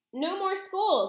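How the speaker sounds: very high, little squeaky mouse voice. Bruno replies to his dad, mr. jenkins, grinning. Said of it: "grinning a broad and asinine mouse grin".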